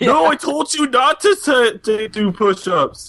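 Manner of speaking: drawn-out, very high, slow voice. Imitating a student refusing to do push-ups, Arnold-like voice. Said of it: "It almost sounded like Arnold Schwarzenegger".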